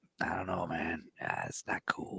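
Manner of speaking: breathy, whispered, growled action-hero voice. Imitating an actor's delivery after saying he growls: imitating him growling his lines. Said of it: "he growls his lines".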